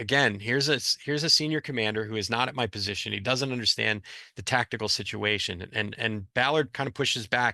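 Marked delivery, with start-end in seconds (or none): none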